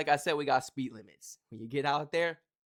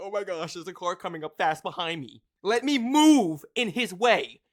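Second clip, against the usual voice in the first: loud, drawn-out, flustered and panicked fretting; 4 semitones higher, 7 dB louder than usual. Imitating drivers who panic at a fast car behind them: imitating panicked drivers. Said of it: "They be panicking".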